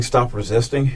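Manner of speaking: ordinary talk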